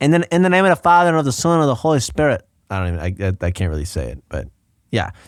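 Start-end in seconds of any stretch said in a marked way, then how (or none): 0.0-2.5 put-on higher-pitched Irish accent. Comparing with the fighter's earlier accent: early Conor McGregor impression. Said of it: "versus at the beginning".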